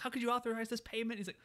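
very high, shrill yell, acted. Describing a favorite boss character who always yells, retelling the boss yelling. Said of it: "He's just always yelling".

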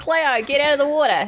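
jokey fake Australian accent. Opening the show, a host quotes H2O in an Australian accent. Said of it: "I'm going to say something in Australian".

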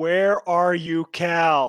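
loud, very slow, stretched-out scream. Voicing a character calling a missing friend through a watch: screaming. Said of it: "just screams into it".

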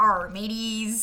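pirate accent. Asked on the show to do a pirate accent right now, doing a pirate accent. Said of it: "Can you do a pirate accent for us right now?".

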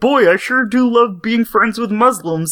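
high, cheerful, sunny frog puppet voice. Showing others how regular Kermit talks before contrasting him with Darth Kermit, Kermit voice. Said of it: "regular Kermit is like".

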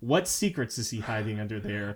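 plain

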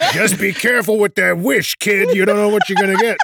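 put-on New York tough-guy gangster accent. Describing a dub, quoting a character in a New York gangster voice. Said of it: "he's like a New York gangsta almost".

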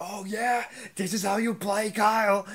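heated, high, shrill screaming. Retelling how CT reacted to Kyle's move: imitating CT screaming. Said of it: "screaming at Kyle".

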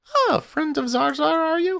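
very high, squeaky orc woman voice. Voicing an orc woman behind a butcher's bar greeting a player: orc woman voice. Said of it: "she looks at you and goes".

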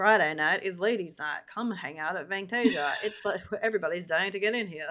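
mock expressionless, bone-dry deadpan delivery. Recapping a show scene, quoting Pam deadpanning. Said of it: "Pam is deadpanning".

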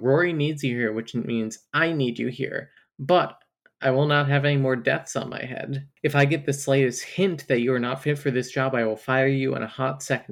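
ordinary talk, nothing marked

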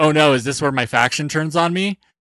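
stunned, shocked, dismayed, alarmed tone. Retelling how Kyle reacted when his faction came out: imitating Kyle being shocked. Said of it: "so shocked".

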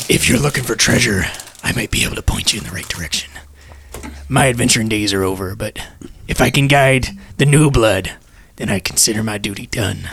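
put-on low, chain-smoking old dog smoker voice. Voicing a character for the group, voice of a pack-a-day smoking corgi. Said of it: "the voice of a corgi who smoked a pack a day".

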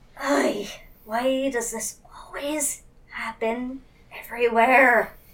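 hushed mutter under the breath, to oneself. Narrating Princess sitting with head in hands, muttering under breath. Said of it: "and under her breath".

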